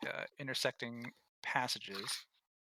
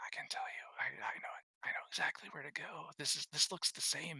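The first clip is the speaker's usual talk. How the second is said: airy inner-voice whisper; 2 semitones higher than usual. Voicing a voice heard in a character's head: whispering voice in your head. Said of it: "you hear the whisper in your head".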